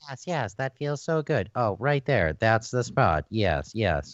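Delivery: low, mechanical, computer-generated robot voice. Acting out two robots talking back and forth, in a robot voice. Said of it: "with the robot voices going back and forth".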